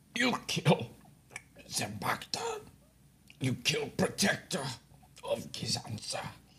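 very feeble, weak, faint whisper. Voicing a badly beaten captive who speaks to his captors: very feeble voice. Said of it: "very feebly".

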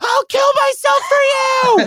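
play-acted, very high, screaming fan-style cry. Recalling a concert, the speaker reenacts what they shouted, retelling a scream. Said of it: "amount of times that I screamed".

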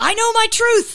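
high, loud, insistent, belted-out voice.

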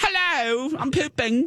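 high, fake British accent.

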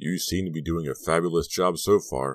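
ordinary delivery

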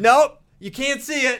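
put-on yelling. Retelling how an intern burst out about the eclipse: imitating someone yelling. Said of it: "he was not pleased".

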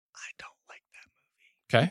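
whispered voice. Giving an opinion on a nominated movie: whispering. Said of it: "You don't have to whisper".

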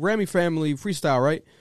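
ordinary talk

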